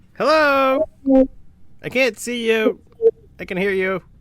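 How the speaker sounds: small, tiny, very high, loud little voice. Someone behind a door calls to people they can hear but not see: tiny voice. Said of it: "you just kind of hear a tiny voice go".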